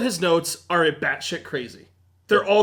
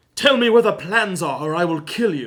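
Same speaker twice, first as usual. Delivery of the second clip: put-on speaking in a British accent. Joking about the film's early version, speaker does British-accent Darth Vader voice. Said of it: "Darth Vader was walking around with this British accent".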